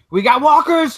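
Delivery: screaming. Voicing a character warning the group about walkers: screaming. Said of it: "she'd definitely scream".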